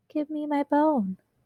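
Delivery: tiny whispered voice. Reading a story, a voice speaks while the teacher pours juice, a teeny tiny whisper. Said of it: "a teeny tiny voice whispered".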